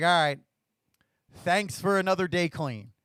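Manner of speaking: put-on grudging, sarcastic delivery with a heavy sigh. Retelling a first bedtime prayer in treatment: imitating own sarcastic tone. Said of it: "Said, like, sarcastically".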